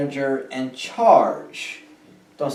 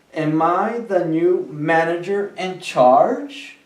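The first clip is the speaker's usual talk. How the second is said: pitch climbs at the end of charge; 3 semitones higher than usual. English lesson on asking questions: pitch rising at end on charge. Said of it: "Tome en cuenta cómo el tono de mi voz subió".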